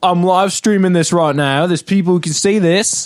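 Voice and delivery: put-on British drifting Australian. Acting out a guy yelling back at people who told him to come alone, put-on British accent sounding Australian. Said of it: "I think he's British or something".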